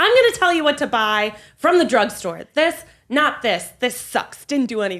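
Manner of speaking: high, blunt, aggressive reviewer voice.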